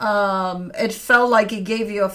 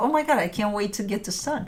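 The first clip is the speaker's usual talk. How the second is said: put-on excited voice, quieter; 5 dB quieter than usual. Describing a tarot reading's energy, voicing the listener: imitating excited person. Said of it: "excited about it".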